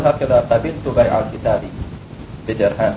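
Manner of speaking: plain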